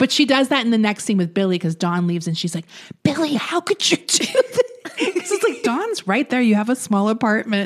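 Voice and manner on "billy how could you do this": very high, angry, hushed whisper. Recapping a scene, quoting Allison scolding Billy, imitating Allison's angry whisper. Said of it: "queen of the angry whisper".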